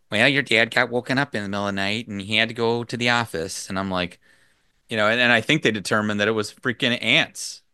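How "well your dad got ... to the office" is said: put-on Midwestern accent. Retelling what their mom said, the speaker quotes her: Midwestern accent for mom. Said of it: "I don't know why I always do this accent for her".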